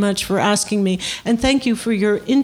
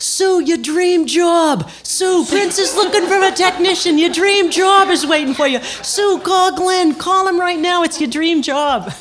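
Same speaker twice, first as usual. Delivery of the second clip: put-on pitched-up Boston accent; 9 semitones higher, 3 dB louder than usual. Retelling how a former boyfriend called her up, imitating John Sacchetti's Boston accent. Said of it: "with that Boston accent, he just went".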